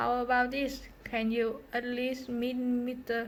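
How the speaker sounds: ordinary delivery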